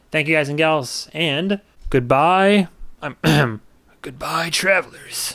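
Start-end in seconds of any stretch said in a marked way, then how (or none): 4.0-5.3 soft, put-on elderly man's voice. Signing off to the audience at the end of an episode, in an old man voice. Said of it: "Is that like an old man voice?".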